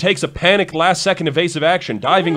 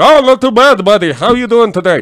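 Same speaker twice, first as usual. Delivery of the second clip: high-pitched, loud, projected cartoon character voice; 5 semitones higher, 7 dB louder than usual. Retelling what a coworker said in greeting: Zoidberg voice. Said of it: "I literally had a coworker who had Zoidberg voice".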